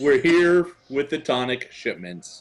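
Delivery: distinctly enunciated, clear, careful delivery. Announcing tonic shipments to an armored guard in character: very loud and very clear. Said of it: "I say this very loudly and very clearly".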